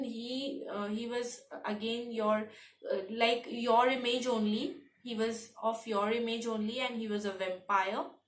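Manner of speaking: ordinary talk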